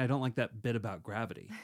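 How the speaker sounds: ordinary talk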